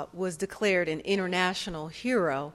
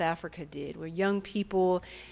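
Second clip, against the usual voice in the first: ordinary talk, nothing marked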